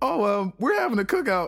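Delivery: put-on no-big-deal tone. Retelling what a woman said, imitating her put-on casual, no-big-deal voice. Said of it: "she tried to like put on the voice, like it was no big deal".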